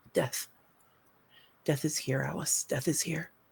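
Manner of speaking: quiet character whisper. Game narrator voices Brenna speaking to Alice; whispering as Brenna. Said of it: "starting to fold against herself and whisper".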